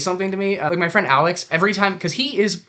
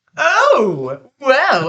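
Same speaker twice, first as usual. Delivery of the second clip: put-on theatrical, performer-like voice; 8 semitones higher, 6 dB louder than usual. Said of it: "he put on this, like, performery voice".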